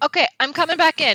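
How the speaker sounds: piercing, shrill, very high-pitched screaming yell. Cutting back into the conversation with the others: screaming loudly. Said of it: "I screamed that so loud".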